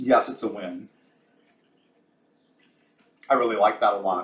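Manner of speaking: talking while chewing. Cook tastes a first attempt at the recipe, talking while chewing. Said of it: "Sorry, chewing".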